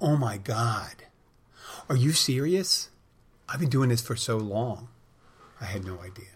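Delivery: put-on astonishment, heavily sarcastic fake surprise. Retelling own past reply to a warning about smoking: sarcastic mock surprise. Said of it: "look at surprise and go".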